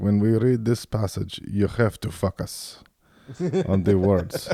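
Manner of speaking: thick put-on Greek accent, focus sounding like fuck us. Speaker quotes a man talking about reading the Bible, imitating a thick Greek accent. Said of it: "He had a thick accent".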